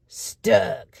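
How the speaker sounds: cross, fed-up, grumpy, displeased tone. Teaching listeners to say a word with grumpiness, grumpy stuck. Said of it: "I want to hear that grumpiness".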